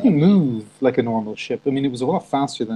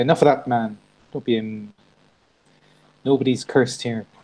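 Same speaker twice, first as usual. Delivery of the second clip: usual speaking voice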